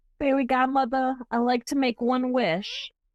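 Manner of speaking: put-on tiny, sweet, cute little child voice. Retelling a little girl asking her fairy godmother for a wish, cute little child voice. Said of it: "she used to have the cutest little voice".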